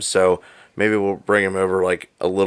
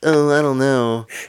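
slow put-on voice. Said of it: "That's my J-".

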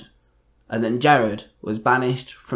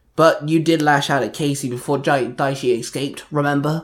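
usual speaking voice

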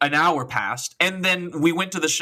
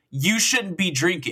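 put-on yelling; 2 semitones higher than usual. Retelling how a cop yelled at the speaker: imitating a cop yelling. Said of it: "yelling at me".

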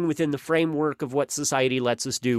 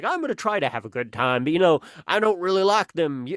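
put-on rural American accent; 2 semitones higher than usual. Retelling what a dad who brought his daughters to the show said, imitating a redneck accent. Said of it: "giving this guy's a hit like a breadneck accent".

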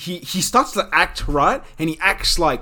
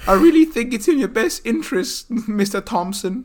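terrible fake Irish woman accent, high; 6 semitones higher than usual. Trying out an accent that a listener calls terrible: bad Irish woman accent. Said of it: "You trying to do an Irish woman?".

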